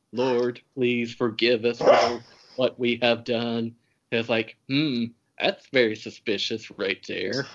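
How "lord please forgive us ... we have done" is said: mock tearful crying voice. Retelling a film scene where a man cries and prays: imitating tearful praying. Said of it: "crying and praying".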